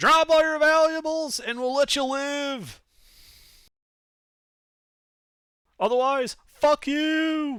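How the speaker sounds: very high, shrill, slow, drawn-out yell. Voicing the guy in the woods answering the party: yelling in character. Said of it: "he just yells back".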